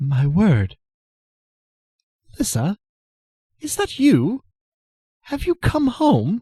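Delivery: conspicuously cultured posh voice, very high-pitched. Narrating a game scene, a voice from behind greets Lissa: conspicuously cultured voice. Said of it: "a conspicuously cultured voice says".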